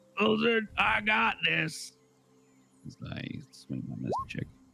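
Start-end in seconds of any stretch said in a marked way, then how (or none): 0.2-1.9 loud, high-pitched, shouted battle yell. A player's character swings a weapon and calls out to another character, yelling to an ally. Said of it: "I'm gonna yell to Wilson".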